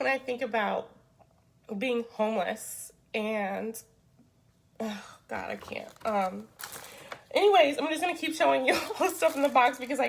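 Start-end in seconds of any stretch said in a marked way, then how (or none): 0.0-5.9 halting voice breaking, fighting off crying. Showing items from a box while facing finishing a master's: holding back tears. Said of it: "I'm not gonna cry".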